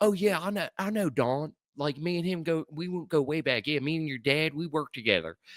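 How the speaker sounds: put-on English with a Baltimore accent. Imitating a character from a show set near Philadelphia: Dundalk Baltimore accent. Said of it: "that motherfucker sounds like he's from Dundalk".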